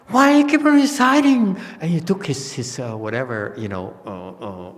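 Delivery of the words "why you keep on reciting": shrill, very high, loud screaming. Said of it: "started screaming and yelling".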